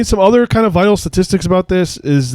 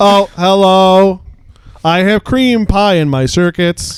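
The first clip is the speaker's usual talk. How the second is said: put-on robot voice; 2 semitones higher than usual. Joking about a robot and Mrs. Doubtfire: robot Mrs. Doubtfire impression. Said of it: "robo, uh, Missus Doubtfire impressions".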